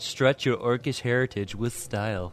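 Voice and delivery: fake haughty, snooty, affected aristocratic elf voice. Quoting the tidy tailor's description in a put-on snooty high elf voice. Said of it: "That was my snooty high elf voice".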